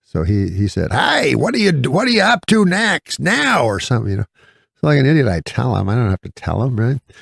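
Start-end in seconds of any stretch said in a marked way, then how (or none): 0.9-3.6 put-on old-man voice, pitched high. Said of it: "so he talks super loud".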